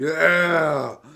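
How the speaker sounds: high, loud orc cheering whoop. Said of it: "you hear an orc raise his arms going".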